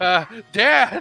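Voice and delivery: mock weirded-out, uneasy, high, loud yelp. Retelling a parody scene, calling to his dad: imitating creeped-out Trunks. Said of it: "Trunks is starting to get creeped out".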